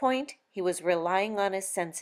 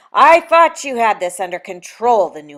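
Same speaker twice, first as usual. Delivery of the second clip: very loud, forceful hiss; 3 semitones higher, 17 dB louder than usual. A newly arrived angel speaks to the two others, hissing. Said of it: "the newcomer hissed".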